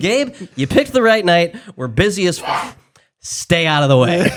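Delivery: mock firm, stern, no-nonsense brush-off. Retelling telling a visitor to stay out of the way: imitating own stern warning. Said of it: "it's about as stern as I get".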